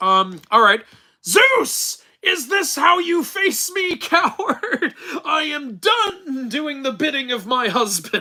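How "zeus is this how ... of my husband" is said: very high, furious, slow drawn-out yelling. Answering a request to do Hera yelling angrily at Zeus. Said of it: "Do an impression of Hera yelling angrily at Zeus".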